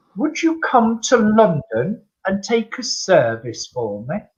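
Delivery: very posh, terribly refined upper-crust gentleman's voice. Retelling what a gentleman said after the evening, very posh voice. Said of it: "the gentleman is talking very posh".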